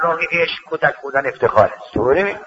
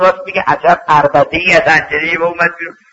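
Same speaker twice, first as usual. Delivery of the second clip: ordinary delivery, nothing marked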